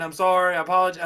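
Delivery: put-on apologetic voice. Retelling a knocked-down boxer bouncing and apologizing: imitating an apologetic boxer.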